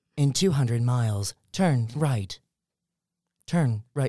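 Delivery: robotic, machine-like sat-nav voice. Speaker giving driving directions as a bit, Siri-style robotic GPS voice. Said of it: "I don't like how accurate that sounds".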